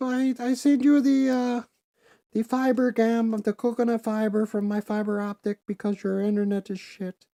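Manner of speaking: booming, very high-pitched, loud Barbadian accent. Retelling what a Barbadian guy who played with them said, imitating Carlos, very high voice. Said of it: "Carlos talk like this. He talk very high up".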